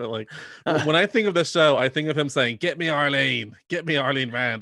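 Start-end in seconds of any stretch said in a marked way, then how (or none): 2.6-4.6 very slow pirate-style drawl, one word stretched. Quoting a man from the show shouting someone's name, in a pirate-like impression. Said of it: "I make him sound like a pirate when I do my impression of him".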